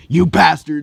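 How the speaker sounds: furious, very loud yell. Retelling a story, quoting Bakugo when he is super pissed. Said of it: "super pissed".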